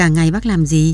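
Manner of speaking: plain reading voice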